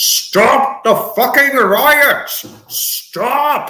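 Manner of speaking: high-pitched, with every word drawn out. Imagining how Brian Blessed would demand the riots stop: Brian Blessed impression. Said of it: "As Brian Blessed would say".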